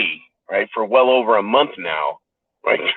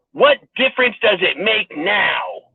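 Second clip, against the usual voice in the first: play-acted, stubborn, furious tone, pitched high; 8 semitones higher than usual. Quoting a reply given at a Senate hearing, imitating an obstinate, furious reply. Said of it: "replied obstinately and furiously with".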